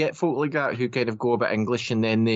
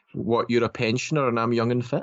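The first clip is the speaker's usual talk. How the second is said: ordinary talk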